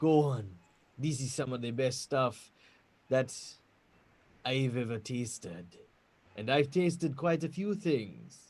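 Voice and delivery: close, hushed, secretive half-whisper right at ear. Narrating a scene where a man opens a barrel and offers a taste, half-whispering. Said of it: "he whispers in your ear".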